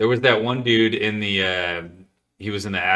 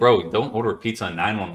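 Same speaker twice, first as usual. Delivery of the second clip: put-on rude, disrespectful tone. Quoting a man talking to a woman on nine one one, retelling a disrespectful remark. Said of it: "He was being like super disrespectful".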